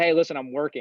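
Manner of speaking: put-on sarcastic delivery. Retelling own reply to teachers in class: imitating own sarcastic reply. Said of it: "I was kind of a sarcastic".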